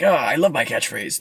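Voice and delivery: cartoon hedgehog character voice. Playing two characters in a bit, the speaker does a Sonic voice. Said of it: "This is my Sonic voice also".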